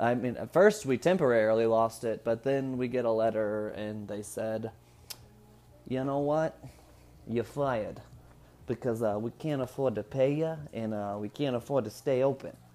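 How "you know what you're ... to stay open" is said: put-on Brooklyn accent. Retelling the letter that came from the employer, in a Brooklyn accent. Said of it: "I don't know why I did a Brooklyn accent".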